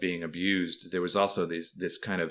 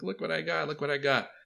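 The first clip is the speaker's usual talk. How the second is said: put-on very high, thrilled, proud show-off kid voice; 9 semitones higher than usual. Retelling a kid showing off a new toy: imitating a happy proud kid. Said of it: "he was all happy about it".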